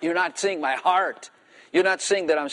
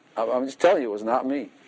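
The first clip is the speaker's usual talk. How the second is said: normal talking voice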